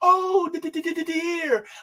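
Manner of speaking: very high, slow stammering, d stammered. Reacting to the whole thing by sounding like Piglet: Piglet voice. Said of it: "I feel like Piglet from Winnie the Pooh".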